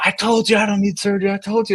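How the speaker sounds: acted, very high-pitched angry shouting. Speaker retells a man insisting he needs no surgery, imitating someone yelling. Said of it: "he kind of starts yelling".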